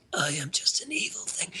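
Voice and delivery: rasping, breathy whisper, barely voiced. Describing an actor's role in Jupiter Ascending, imitating a raspy whisper. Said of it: "he either whispers raspily".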